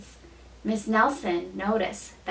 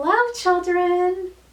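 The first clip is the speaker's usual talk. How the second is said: very high, sweet voice; 9 semitones higher, 5 dB louder than usual. Reading a story aloud, someone greets the children in a sweet voice. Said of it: "someone said in a sweet voice".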